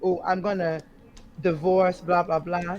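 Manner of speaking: ordinary talk, nothing marked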